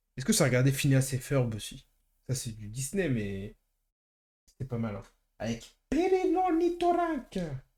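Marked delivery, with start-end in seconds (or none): 5.4-7.4 very high, swooping, squeaky sing-song cartoon voice. Talking about watching Phineas and Ferb, the speaker does a bad Phineas and Ferb impression. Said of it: "très mauvaise imitation".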